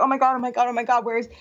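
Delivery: acted panic, freaking out. Coming back to find him gone, retelling freaking out. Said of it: "And I'm like freaking out".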